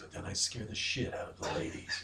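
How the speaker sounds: breathy, sultry, seductive whisper. Speaker shows what trying to sound seductive would be like: seductive voice. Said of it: "if I wanted to sound seductive, it would be like this".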